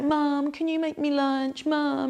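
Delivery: put-on very high, whiny, nagging kid voice. Mother imitating her nearly fifteen-year-old son on a weekend, imitating son's whingy nagging. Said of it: "he's doing that whingy, naggy, naggy thing".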